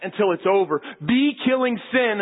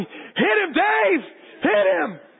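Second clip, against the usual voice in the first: acted very high, very slow, drawn-out shout; 10 semitones higher than usual. Retelling holding a bully while urging Dave to hit him, retelling a yell. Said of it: "I was yelling".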